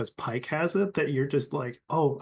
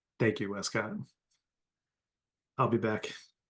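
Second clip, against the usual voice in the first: low, quiet, hushed murmur; 3 semitones lower than usual. Speaking in character to a crewmate so others can't hear: speaking quietly. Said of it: "quietly, 'cause I don't want the others to hear".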